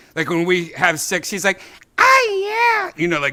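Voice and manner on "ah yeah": very high, squeaky, put-on voice. Retelling what Janice says, imitating Janice's exact voice. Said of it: "that same thing, like, the exact voice".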